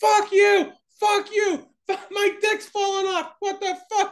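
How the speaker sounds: put-on shrill, very high, drawn-out screaming. Retelling screaming in front of waiting kids, retelling own screaming. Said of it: "and I'm screaming".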